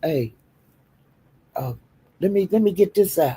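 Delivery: soft, patient, gentle, easy soothing talking-down voice. Imitating the captain calming a drunk woman: imitating the captain's patient talk. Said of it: "you have to talk to her like this".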